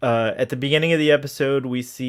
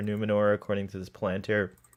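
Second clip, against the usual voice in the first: ordinary talk, nothing marked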